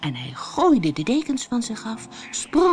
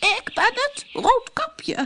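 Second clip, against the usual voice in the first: fake tiny voice, very high, very slow, drawn out; 13 semitones higher than usual. The wolf at grandmother's door, answering her: wolf's high little voice. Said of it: "zei de wolf met een hoog stemmetje".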